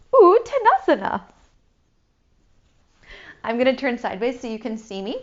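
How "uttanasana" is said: impressed, much higher, louder. Yoga teacher modeling how to say a pose name, impressed. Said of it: "Now say it like you're impressed".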